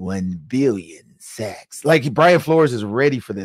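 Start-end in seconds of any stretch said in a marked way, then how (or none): 0.0-1.8 low, hushed, quiet movie villain voice. Speaker pictures a coach answering how many sacks, Dr. Evil impression. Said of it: "I did my Dr. Evil impression".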